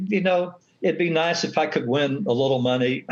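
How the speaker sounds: ordinary talk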